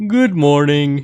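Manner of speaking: cartoon voice, "good morning" given a tune. Correcting the other speaker's intonation of the greeting, Uncle Grandpa voice. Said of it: "you're getting the like inton- intonation wrong. It's like".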